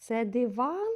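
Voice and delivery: диван said with rising pitch. Ukrainian lesson on word stress, asking about a word: rising question tune on диван. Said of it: "будемо використовувати питальний тон".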